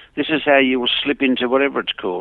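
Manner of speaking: normal talking voice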